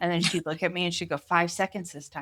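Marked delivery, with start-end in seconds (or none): none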